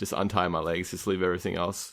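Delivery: ordinary talk, nothing marked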